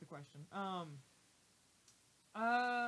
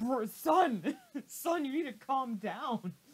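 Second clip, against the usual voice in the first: loud, giggly, spoken while laughing. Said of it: "Glitch is just like".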